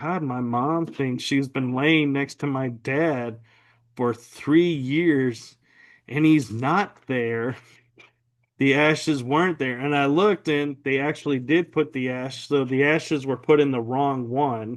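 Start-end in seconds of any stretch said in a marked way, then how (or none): none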